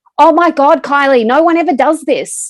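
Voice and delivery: high, very loud group yelling. Retelling how the children's group reacted: imitating people yelling. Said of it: "looked at me and yelled".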